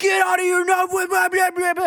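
very high-pitched, loud screamed yell. Retelling how a tomb guard yelled at a tourist: imitating a scream. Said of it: "screamed at her".

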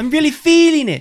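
bad, shrill, very loud voice, belted high and badly. Quoting a game character's catchphrase to friends: terrible Shulk impersonation. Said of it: "That was a terrible impersonation".

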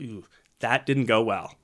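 plain

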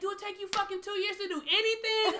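mock shrill, very high-pitched carrying shout. Retelling being kept waiting for paperwork: retelling a yell. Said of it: "I'm yelling across the garden".

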